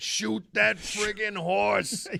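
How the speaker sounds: put-on high, loud shout in heavy New York accent. Recalling a man two rows back shouting at a horse, in a thick New York accent. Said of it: "the thickest New York accent I think you can possibly imagine".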